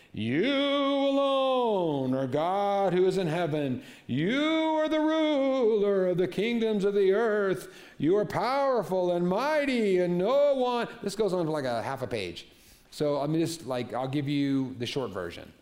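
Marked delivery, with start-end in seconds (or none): 0.2-10.9 shaky, loud, high, super-fancy praying voice. Retelling a man's prayer from verse six, in a put-on shaky praying voice. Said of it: "He might have even done like the shaky voice".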